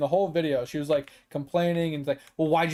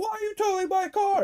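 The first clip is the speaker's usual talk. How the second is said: mock very high, panicked, freaked-out cry. Retelling her question as her car was towed: imitating someone freaking out. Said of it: "she's freaking out about it".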